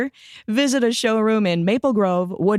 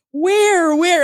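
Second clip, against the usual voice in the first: mock frantic, high, loud panicked yell; 11 semitones higher, 5 dB louder than usual. Retelling yelling to the guys below while nearing the dock: retelling a panicked yell. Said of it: "I'm yelling at these guys going".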